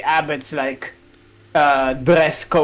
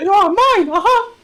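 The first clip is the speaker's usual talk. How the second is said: very high-pitched, loud cartoon mouse voice; 5 dB louder than usual. Voicing Strahd from Curse of Strahd as a joke: Mickey Mouse voice. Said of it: "but Strahd talks like Mickey Mouse".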